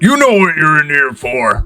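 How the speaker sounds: high, swooping, condescending cop voice. Voicing a cop telling a prisoner to stop banging: Dracona cop voice. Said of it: "It's like".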